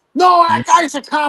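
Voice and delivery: screamed words. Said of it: "Now they're all screaming".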